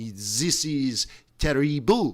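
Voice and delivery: put-on German-accented speech. Imitating a central banker lamenting the strong euro: imitating Christine Lagarde, German-sounding. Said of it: "that sounded German".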